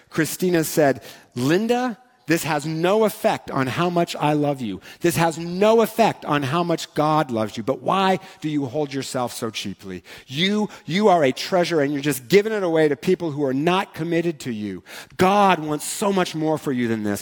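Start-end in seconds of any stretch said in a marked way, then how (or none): 1.4-17.3 mock earnest, impassioned, heartfelt pleading. Retelling what someone told a caller who felt ashamed, retelling words in a passionate voice. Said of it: "in this passionate voice".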